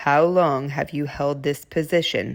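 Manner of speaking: low, steady voice from the chest. Asking a chief financial officer, for the record, about his position, low voice. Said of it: "I'll be speaking in a low voice".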